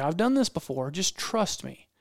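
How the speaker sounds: normal talking voice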